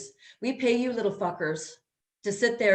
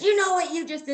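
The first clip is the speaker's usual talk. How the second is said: play-acted, high, enraged traffic cop yelling; 9 semitones higher than usual. Retelling a traffic stop, the cop's first words: imitating a cop yelling. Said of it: "And he starts yelling at me".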